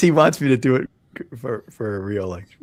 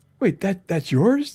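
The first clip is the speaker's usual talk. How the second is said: astonished, surprised, pitched-up voice; 8 semitones higher, 3 dB quieter than usual. Seeing another speaker's magazine cover art for the first time: surprised. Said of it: "You sound surprised".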